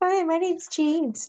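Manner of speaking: put-on very high, girlish voice. Mocking James after saying he has a girly voice, imitating James's girly voice. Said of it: "Has such a girly voice".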